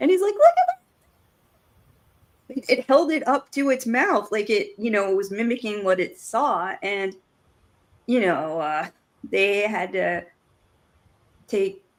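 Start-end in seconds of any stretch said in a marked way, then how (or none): 0.3-2.7 voice very high in delight, loud and swooping. Retelling a giggling cop's reaction, imitating his high-pitched voice. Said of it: "his voice went all high pitched".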